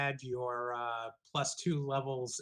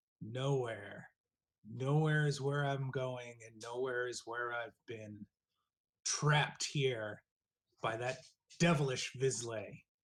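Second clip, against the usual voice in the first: raspy ghostly voice from beyond the grave. Storyteller voices a spirit replying to a player: raspy spirit voice. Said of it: "just replies in a raspy voice".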